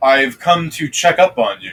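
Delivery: muffled, dampened-sounding voice. Voicing the vizier as heard by the listeners, muffled voice. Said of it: "you'll hear a muffled voice of the vizier".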